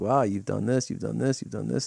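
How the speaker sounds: ordinary delivery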